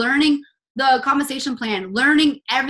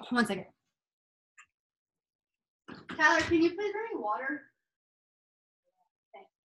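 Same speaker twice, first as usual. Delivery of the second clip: choking, throat catching, quieter; 2 semitones higher, 11 dB quieter than usual. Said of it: "choking on, like, nothing".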